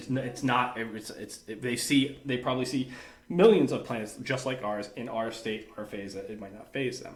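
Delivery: plain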